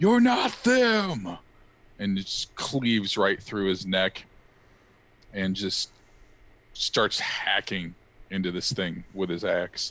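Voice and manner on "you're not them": shrill, very high, loud screaming shout. Narrating a fight as the character Fenris rears back and yells at the creature. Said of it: "he just yells".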